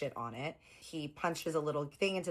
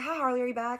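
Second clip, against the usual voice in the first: put-on lovely, pitched-up, loud Southern lady's accent; 9 semitones higher, 5 dB louder than usual. Retelling a phone call with a nurse: imitating a Southern woman. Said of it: "this lovely Southern woman".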